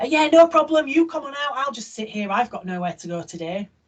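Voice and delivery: mock-cross sarcasm. Acting out own remark to a driver who didn't say thanks: imitating own sarcastic passive-aggressive remark. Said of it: "I'm cross, sarcastic and passive aggressive".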